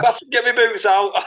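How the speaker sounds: high, loud mock shout.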